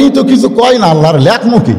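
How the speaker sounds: ordinary talk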